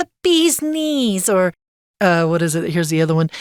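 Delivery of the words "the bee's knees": very high, flapper-style put-on New Jersey accent. Saying a Roaring Twenties phrase the way it sounds to them, in a New Jersey accent. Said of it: "I think it almost has like a New Jersey accent".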